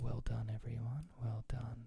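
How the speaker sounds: put-on calm, soothing instructor voice. Imitating a yoga teacher guiding a class: soothing yoga teacher voice. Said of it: "that's not my yoga voice".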